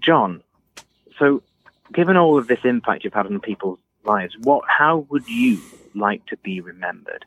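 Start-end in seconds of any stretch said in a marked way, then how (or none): none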